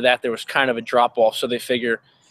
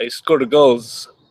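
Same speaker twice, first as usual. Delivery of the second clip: fake put-on Russian accent. Joking about a hockey player's accent: fake Russian accent as Nico Hischier. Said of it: "It's funnier if I talk like he's Russian".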